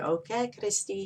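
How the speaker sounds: put-on thick French accent. A speaker quotes her mother's words to her: heavy French accent. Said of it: "she had a very heavy, beautiful French accent".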